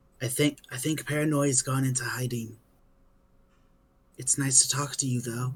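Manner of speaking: half-whispered, very soft. Narrating, a rock half-whispers back to a player who asked it a question, half-whispering rock. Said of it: "the rock whispers back like".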